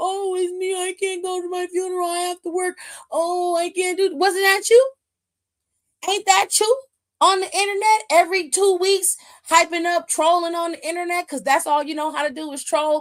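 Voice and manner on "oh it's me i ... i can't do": put-on blubbering, whiny fake sobbing. Imitating someone crying online about missing a family funeral: mock crying. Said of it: "crying 'cause you couldn't make it".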